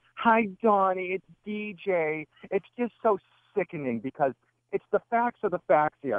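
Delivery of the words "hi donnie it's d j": very drawn-out, slow, mocking put-on voice. Retelling a conference call, imitating a caller in a mocking voice. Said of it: "You did one of those voices".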